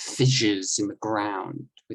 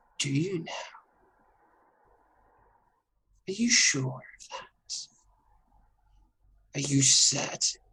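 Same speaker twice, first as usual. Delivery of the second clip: high, eerie, mystical ghostly voice; 5 semitones higher than usual. Pressing someone on what they really know, in a weird mystical ghost voice. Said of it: "who weird mystical ghost voice is".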